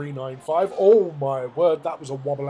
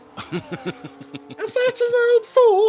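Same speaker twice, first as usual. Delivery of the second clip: very high, astonished, swooping yelp; 5 dB louder than usual. After the other speaker apologises for a high-pitched voice, do your Nell Boy impression. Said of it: "I will now do my impression of Nell Boy".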